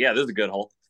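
loud, dripping with dry sarcasm. Retelling a playing partner's remark about a hole: imitating Russell's sarcastic tone. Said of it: "how sarcastic he is".

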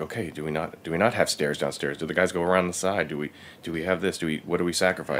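usual speaking voice

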